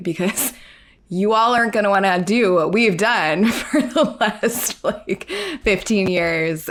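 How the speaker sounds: said with a laugh, laughing throughout.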